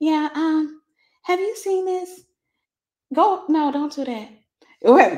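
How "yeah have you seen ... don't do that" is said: put-on soft, sweet, mousy little voice. Recalling their soft-spoken mom, speaker imitates her in a soft Mickey Mouse type voice. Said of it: "soft Mickey Mouse type voice".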